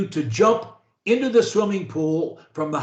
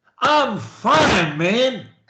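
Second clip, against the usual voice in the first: energetic, passionate delivery full of conviction; 4 semitones higher than usual. Showing a learner how to say a phrase: energetic, passionate delivery. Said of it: "with energy, with passion".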